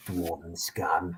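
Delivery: low, very quiet whisper in a thick put-on accent. Narrating a scene where one of the strangers whispers: whispered Star Wars accent. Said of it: "whisper in a very Star Wars accent".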